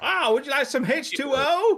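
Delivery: put-on southern American accent. Retelling how a player talked in the game, put-on southern accent. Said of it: "he would speak in like this southern accent".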